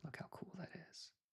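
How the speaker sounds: hushed, very quiet whisper. Showing off a sketch on the canvas while drawing, whispering. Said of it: "I'm whispering".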